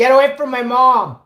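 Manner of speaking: acted yelling. Retelling how they yelled at a woman confronting their mom, retelling own yell. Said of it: "I'm yelling at the Karen".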